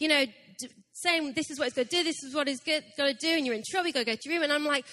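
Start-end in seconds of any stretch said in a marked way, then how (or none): none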